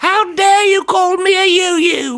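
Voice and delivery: slow, shrill, very high comic woman's voice. Repeating a line from a sitcom joke in a Monty Python woman's voice. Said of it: "in a Monty Python woman's voice".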